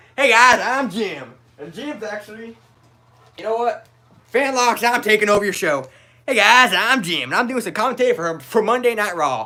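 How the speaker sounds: high, loud cartoon voice. Demonstrating a character voice doing wrestling commentary: Ice King voice. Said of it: "Jim's voice, the Ice King".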